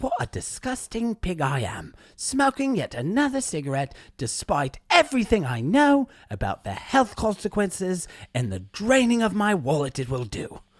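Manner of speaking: put-on British accent, narrator-style voice. Imitating the british narrator of a quit-smoking audiobook: british audiobook narrator voice. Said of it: "I should just do the whole podcast like that guy".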